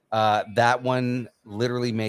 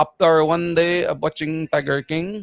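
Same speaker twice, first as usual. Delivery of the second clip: imitated deep Filipino accent; 7 semitones higher, 4 dB louder than usual. Retelling a TikTok joke about Tiger King: imitating a deep Filipino accent.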